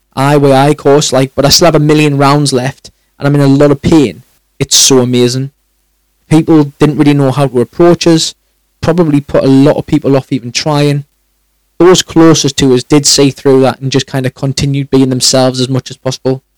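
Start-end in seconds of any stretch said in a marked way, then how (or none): none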